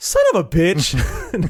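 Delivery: mock affectionate, playful sing-song, very slow and high. Retelling how a character says a line, not angrily: imitating a fun, caring delivery. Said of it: "with so much fun and caring".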